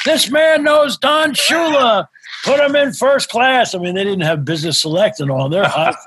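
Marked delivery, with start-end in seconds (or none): 0.0-3.7 put-on very high, loud, slow, drawn-out shout. Retelling what the check-in worker did on seeing the book: imitating someone shouting. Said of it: "he shouts out".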